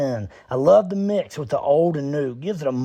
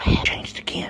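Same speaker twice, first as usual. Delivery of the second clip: hushed, whispered voice. Commenting on pictures in a video that keep changing early: whispering. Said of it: "Why are you whispering?".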